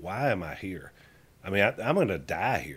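ordinary talk, nothing marked

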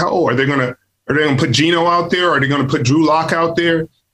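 normal talking voice

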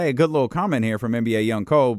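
sarcastic acted-out voice. Retelling the other speaker's earlier comment: imitating a sarcastic remark. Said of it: "sarcastically said".

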